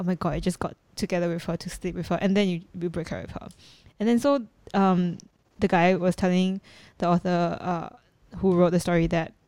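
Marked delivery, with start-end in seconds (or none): none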